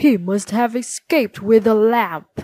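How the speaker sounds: loud, snarling villain voice. Reading Aladdin aloud, Abanazar learns of Aladdin's good fortune, snarling. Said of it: "he snarled".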